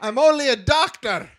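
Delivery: put-on very high Scottish accent. Quoting a Star Trek line to the other speaker, in a Scottish accent. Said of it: "I was doing the Scottish accent for the wrong guy".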